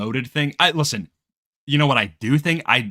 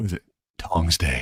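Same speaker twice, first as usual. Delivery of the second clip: very low, slow superhero voice; 7 semitones lower, 4 dB quieter than usual. Joking about a character sounding like Batman: Batman voice. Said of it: "he's gonna be like Batman. He's like".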